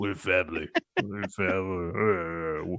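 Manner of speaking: deep, slow, low, with "family" drawn out. Speaker keeps it like real Vin Diesel: Vin Diesel impression. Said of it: "keep it like real Vin Diesel".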